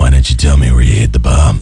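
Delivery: ordinary delivery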